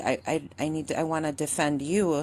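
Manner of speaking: teary, weeping speech. Retelling own words to a brother as a child: imitating own past crying. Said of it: "And then I'd be crying".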